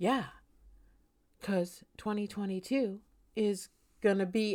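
slow, dragging, drawn-out, unhurried cadence. Imitating an astrologer heard on podcasts: imitating Ross Ben's slow talking. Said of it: "Why do you think they have to talk so slowly?".

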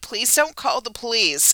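mock-sobbing, pleading, acted-out sobbing voice. Retelling being pulled over, the group begs the man not to call police: retelling a sobbing plea. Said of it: "And so we are sobbing".

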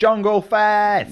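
very high, shrill screamed yell. Retelling how a man screams as he goes off, retelling a scream. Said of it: "He just screams".

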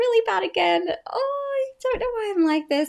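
very high, bright, cheery sing-song tone. Starting to tell the final ick story: high-pitched and cheery. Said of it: "I sound really high-pitched and like it's all good".

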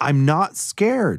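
firm, stubborn insistence. Hansa answers a speaker urging him to try city food, insisting. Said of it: "Hansa insisted".

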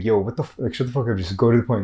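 put-on annoyed tone. Retelling watching a video that drags on, acting out getting pissed off. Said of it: "getting pissed off throughout the way".

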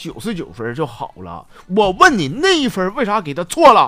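play-acted loud, high, demanding, cross-examining tone. Recalling showing a test score to his father, retelling dad's interrogating tone. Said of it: "反倒是质问我说".

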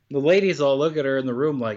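ordinary talk

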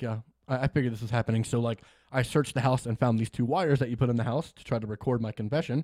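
normal talking voice

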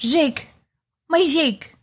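put-on French accent in an alien voice. Retelling a romantic movie scene, quoting the woman calling her partner, in a little French Na'vi accent. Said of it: "little French Navi accent".

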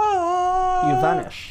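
very high, slow, swooping dramatic vanishing sound effect.

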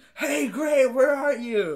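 mock very slow, high, drawn-out stretched yell. Retelling an anime scene where a character yells for Gray: imitating a yell. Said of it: "Natsu starts yelling".

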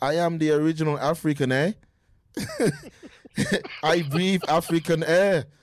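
wide-pitched mock South African accent.

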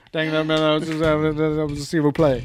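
mock cartoonish drawl. Comparing how someone talks to a cartoon character, Boomhauer impression. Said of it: "like Boomhauer from King of the Hill trying to speak French".

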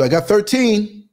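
loud, high calling out. Describing logging arriving vans, retelling someone yelling through the window. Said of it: "they would go yell through the window".

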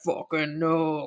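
huge tree-giant voice, very deep bass. Retelling a film scene where the Green Knight answers: really bass Green Knight voice. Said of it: "got a really bass voice".

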